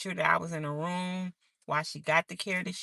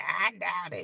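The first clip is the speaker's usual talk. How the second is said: put-on rough, very raspy old-sounding voice. Speaker recounts what a woman said when he arrived in her room, imitating her raspy voice. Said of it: "She had this real raspy voice".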